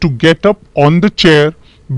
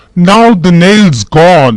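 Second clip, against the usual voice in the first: cross, irritated, angry and annoyed voice; 4 dB louder than usual. Reading a story where a man drops the nail: angry voice. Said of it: "he would say in an angry voice".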